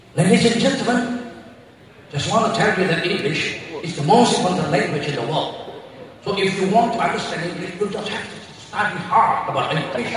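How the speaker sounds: put-on English accent.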